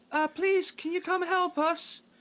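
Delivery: put-on very high, young, feminine, girlish shout. The game master voices someone shouting back to the players, young feminine voice shouting. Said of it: "a young feminine voice shout back".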